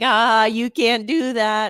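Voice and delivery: put-on teasing taunt, slow and drawn-out. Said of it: "And it's like".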